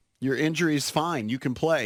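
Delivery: ordinary talk, nothing marked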